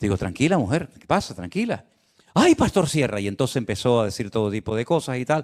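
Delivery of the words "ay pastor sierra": put-on Venezuelan accent, much higher. Pastor Sierra retells a woman rushing up to him: imitating strong Venezuelan accent. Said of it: "acento muy, muy, muy venezolano".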